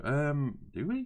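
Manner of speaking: put-on, very high, puzzled, bewildered, rising tone. Retelling own reply when told to roll for priority: imitating own confused voice. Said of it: "you can kind of hear the confusion in my voice".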